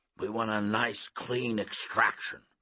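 plain

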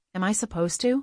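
plain reading voice

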